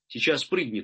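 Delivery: ordinary delivery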